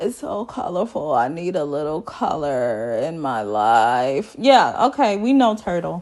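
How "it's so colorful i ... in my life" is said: mock slow, dramatic speech, lower and quieter. Retelling what Ryan said on seeing an apartment: imitating slow, dramatic talk. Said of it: "he talks slow and dramatic".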